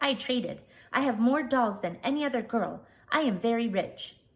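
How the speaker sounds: small, contented, pleased and satisfied voice. A chief's daughter answers the narrator in a satisfied little voice. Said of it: "she said in a satisfied little voice".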